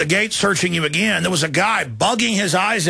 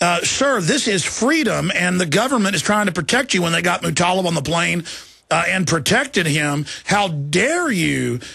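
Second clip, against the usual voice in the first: ordinary talk, nothing marked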